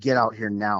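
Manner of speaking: put-on frightened, fearful voice. Retelling what a woman urgently told him while he stood at his door, imitating a frightened voice. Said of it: "I can just hear fear in her voice".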